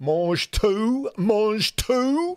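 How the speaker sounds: very slow French spoken with a bad English accent. Giving an example of bad pronunciation from Only Fools and Horses, like Del Boy speaking bad French. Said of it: "like a Del Boy from Only Fools and Horses when he goes to French".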